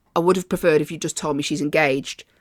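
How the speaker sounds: ordinary talk, nothing marked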